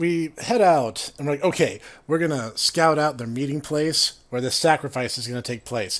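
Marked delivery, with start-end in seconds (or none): none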